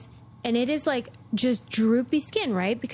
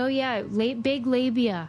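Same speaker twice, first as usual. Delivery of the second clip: ordinary delivery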